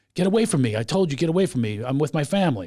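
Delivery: ordinary talk, nothing marked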